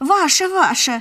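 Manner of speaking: big-hearted, gracious, magnanimous, generous tone. People waiting on the sofas give the old man their turn, magnanimous. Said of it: "великодушно закивали с диванов".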